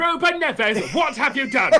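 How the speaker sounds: very high, scolding, telling-off mum shout. Showing how to call out a name, shouted like a mum. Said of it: "you've got to shout it like a mum".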